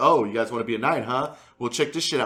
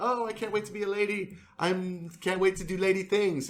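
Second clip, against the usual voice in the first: pitched-up, prissy woman's voice; 8 semitones higher, 5 dB quieter than usual. Retelling a story, imitating Sansa's eagerness to be a lady: prissy Sansa voice. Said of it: "a prissy".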